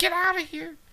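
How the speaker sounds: put-on very high, shrill, terrified little-girl scream. Retelling how Todd Standing sounded in his video: imitating his high-pitched scared voice. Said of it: "getting a high-pitched noise like ... like a little girl".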